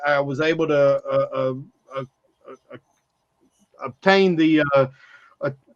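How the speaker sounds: stuttering, stumbling over words. Explaining how he got the official Twitter account, stuttering a little. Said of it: "I'm stuttering a little bit".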